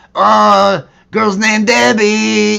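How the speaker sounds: very high, very loud, rough, rasping stoner voice. Showing the voice of a pot smoking taco character: Cheech Marin voice. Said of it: "me doing a Cheech Marin, uh, impression".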